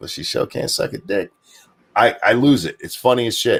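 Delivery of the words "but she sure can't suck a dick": hushed, whispered, sly mutter under the breath. Retelling a funny movie scene's punchline: imitating muttering under breath. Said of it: "under his breath".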